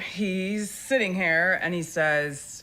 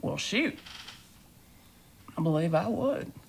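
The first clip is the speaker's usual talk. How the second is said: put-on good old boy voice; 4 dB quieter than usual. Showing how a good old boy would talk, answering in a good old boy voice. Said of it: "it's more like".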